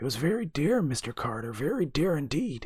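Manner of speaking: croaking voice. Narrator reading an old man's reply to Mr. Carter, in a croaking voice. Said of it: "his voice croaked, as if from disuse".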